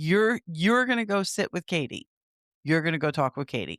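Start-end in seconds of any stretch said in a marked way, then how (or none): none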